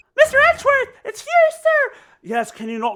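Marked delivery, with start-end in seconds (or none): 0.2-2.0 very loud, very high bellowing. Voicing a caller on the phone who has found something: yelling into the phone. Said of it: "You don't need to yell into the phone".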